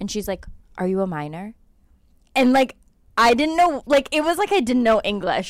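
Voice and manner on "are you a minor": mock whispering. Retelling what an airport agent asked: imitating someone whispering. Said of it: "whispers it".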